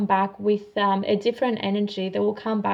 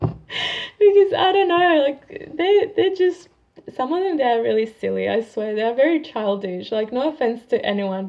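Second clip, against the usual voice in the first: high, laugh-filled chatter through laughter; 3 semitones higher, 3 dB louder than usual. Talking about people who act childish, laughing while talking. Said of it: "I'm just laughing because".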